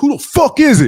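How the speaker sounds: mock shrill, very high shout. Retelling how Abdul Gaddy went to the door after loud knocking; imitating Abdul Gaddy yelling. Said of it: "why is he yelling?".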